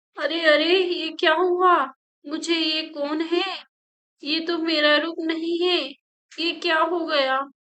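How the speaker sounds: panicked yelling at the top of the voice. Narrator reads a character seeing her changed face in the mirror: shouting loudly. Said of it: "वो जोर जोर से चिल्लाने लगती है".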